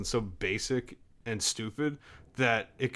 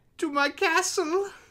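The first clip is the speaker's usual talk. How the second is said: very high-pitched character voice. Welcoming listeners as the wizard Giller: Giller voice. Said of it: "you think that's what Giller sounds like".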